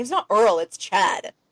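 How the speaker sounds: irritated, fed-up, annoyed ghost voice. Imagining a ghost upset about being called Earl: imitating an angry ghost. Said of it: "now he's just mad because everyone keeps calling him Earl".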